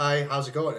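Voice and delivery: low, flat monotone, pitched slightly down. Explaining how Batman talks compared to Bruce Wayne: monotone Batman voice. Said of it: "brings it down just a little bit, makes it very monotone".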